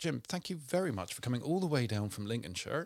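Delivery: broad, exaggerated, put-on West Country accent. Thanking a guest for coming down: exaggerated West Country accent. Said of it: "I went super West Country there".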